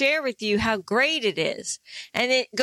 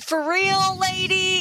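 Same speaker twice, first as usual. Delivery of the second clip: sarcastic, pitched-up, dripping with sarcasm; 9 semitones higher than usual. Retelling someone's reply to a message: imitating a sarcastic reply. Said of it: "Is that a sarcastic?".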